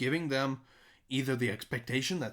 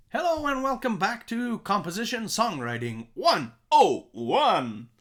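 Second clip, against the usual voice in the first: slow, raised radio presenter voice; 7 semitones higher, 7 dB louder than usual. Opening a songwriting course session, in a radio voice. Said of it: "That was my radio voice".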